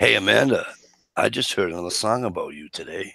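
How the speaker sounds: sleazy, creepy, lecherous voice. Friends trying out lines addressed to amanda, creepy pervy-uncle voice. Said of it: "You sound like Uncle Pervy".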